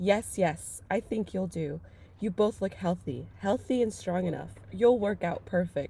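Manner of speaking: ordinary talk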